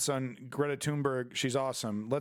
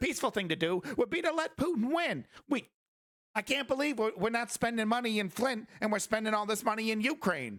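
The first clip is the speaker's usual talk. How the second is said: mocking put-on pundit voice, higher pitched; 9 semitones higher than usual. Mocking pundits who want to stop helping Ukraine: Jimmy Dore impression. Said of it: "It's my Jimmy Dore com-, impression".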